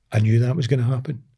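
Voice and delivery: ordinary talk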